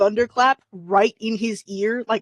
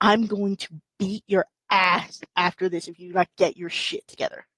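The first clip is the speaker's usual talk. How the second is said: put-on smiling menace, lower; 3 semitones lower, 3 dB quieter than usual. Retelling a parent leaning down in a store: imitating a parent's smiling threat. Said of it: "smiling to everybody, go".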